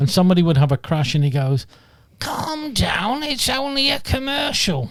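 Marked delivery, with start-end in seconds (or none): 2.2-4.9 very high, slow voice. Imitating a film director's line from a car insurance commercial: Michael Winner voice. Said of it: "shall I do the voice?".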